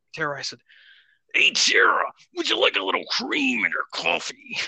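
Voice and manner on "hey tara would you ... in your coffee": rough, creaky, rasping macho wrestler voice. Retelling offering coffee cream while flexing: Macho Man Randy Savage voice. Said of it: "in the Macho Man Randy Savage voice".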